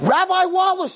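very high, shrill, furious shrieking scream. Retelling how a girl started screaming at him in front of everyone, imitating Abby screaming. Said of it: "she starts screaming".

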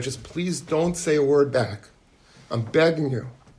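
mock imploring, earnest, desperate, begging plea. Retelling how a woman begged another not to answer back: imitating someone pleading. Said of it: "she pleads with her".

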